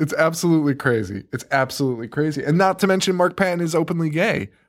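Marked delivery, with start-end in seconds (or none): 1.3-2.4 quick, fast, offhand throwaway delivery. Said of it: "repeated for emphasis".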